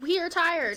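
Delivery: stress on TIRED. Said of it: "Emphasis on the tired".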